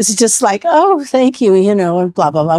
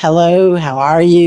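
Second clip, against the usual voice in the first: put-on mellow Western voice, much lower, slower; 4 semitones lower than usual. Retelling how someone described talking like you're from the West, put-on mellow Western voice. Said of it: "real mellow".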